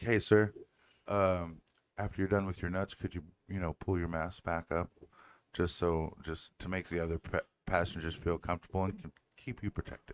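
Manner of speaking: sweet, courteous, gentle polite tone. Imagining how a lady might have asked a passenger to pull his mask up, imitating a polite request. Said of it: "it's all in a tone of voice".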